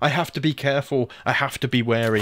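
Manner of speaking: plain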